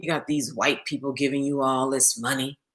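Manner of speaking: grudging, resentful tone. Retelling what the speaker's boyfriend said to them, imitating a resentful tone. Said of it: "he said to me in a resentful kind of tone".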